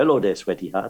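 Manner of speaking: put-on Spanish accent. Recalling a comedian's stage entrance line, Pancho Villa's fake Spanish accent. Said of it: "he used to speak in a Spanish accent. He used to come on and go".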